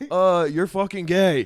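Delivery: loud, high-pitched heckler-style yell.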